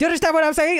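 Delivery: very high-pitched gibberish, rattled off fast. Retelling a streamer's frantic phone call: imitating xQc talking fast. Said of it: "you know how he gets, like, all gibberishy when he starts talking fast".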